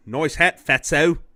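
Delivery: very loud, high, put-on Australian accent. Retelling what a goth kid said to you, imitating an australian accent. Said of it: "you can't be goth with that accent".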